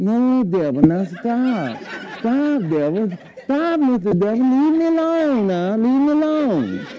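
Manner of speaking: weak, anemic, drawn-out pleading, no stretched. Speaker demonstrates the wrong way to tell the devil no, soft-bellied no. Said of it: "one of these soft-bellied no's".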